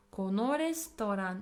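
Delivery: normal talking voice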